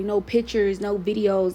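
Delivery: normal talking voice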